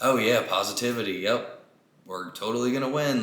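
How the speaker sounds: heavy, acted sarcasm poured out, mocking and taunting. Retelling own messages to teammates in a lost game: imitating own sarcastic taunt. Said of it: "all the sarcasm I was just spewing".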